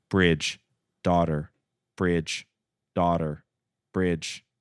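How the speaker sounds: flat, level, monotone robotic synthetic voice. Speaker describing a character's line, in a flat monotone AI voice. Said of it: "so it's completely flat and monotone".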